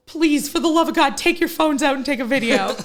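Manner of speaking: loud, high-pitched screaming. Telling a story, the speaker re-enacts yelling to the people around them, retelling own screaming. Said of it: "I'm screaming to all these people".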